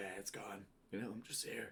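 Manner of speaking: hoarse, worn-out voice like a lifelong smoker. Retelling a phone call home after losing the voice: imitating own lost voice. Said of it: "Sounded like I've been smoking for fucking fifty years".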